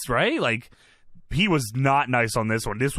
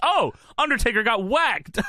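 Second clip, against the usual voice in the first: put-on ringside announcer yell; 9 semitones higher than usual. Retelling what Cole yells during the match: imitating Cole yelling. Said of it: "Cole yells".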